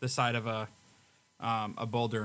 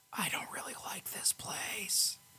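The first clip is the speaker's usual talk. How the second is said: hushed, whispered aside; 9 semitones higher, 6 dB quieter than usual. Voicing Stan speaking to Aiden while sneaking forward: whispering in character. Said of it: "Stan just kinda whispers to Aiden".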